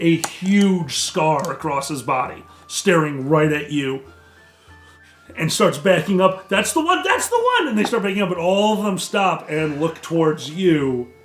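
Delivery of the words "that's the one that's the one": very high, shrill, creature-like screeching. Voicing a frightened kobold pointing out an enemy: screeching kobold voice. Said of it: "One of them screeches to it".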